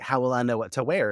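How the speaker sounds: ordinary talk, nothing marked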